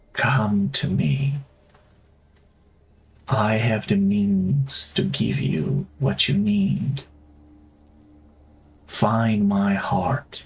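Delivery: female-sounding voice. Game master voicing a woman heard as a player opens a secret stairwell: half-whispering woman's voice. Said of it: "and whisper".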